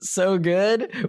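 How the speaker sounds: light, gentle, high-pitched mock half-sobbing. Speaker recalls answering someone while still crying, retelling light sobbing. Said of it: "which I'm I'm lightly sobbing".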